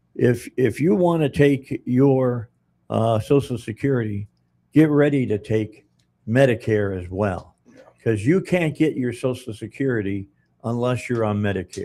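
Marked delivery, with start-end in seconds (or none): none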